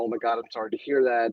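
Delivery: ordinary delivery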